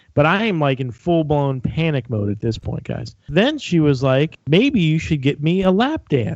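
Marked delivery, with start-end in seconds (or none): 4.4-6.3 put-on Southern accent. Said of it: "she had a southern accent".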